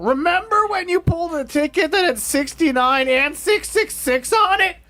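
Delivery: ragged, very high-pitched comedian voice. Joking that the show just turned into the Chris Farley show, Chris Farley impression. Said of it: "Does my voice sound more ragged after doing that?".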